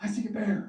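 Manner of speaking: put-on worked-up, eager, excited blurt. Retelling how a twelve-year-old spotted a bear: imitating someone excited. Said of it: "he's all excited".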